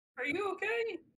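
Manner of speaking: small, squeaky little voice, pitched high. In a roleplay, checking on a party member lying down after a hard hit, tiny squeaky voice. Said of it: "a very tiny, squeaky voice".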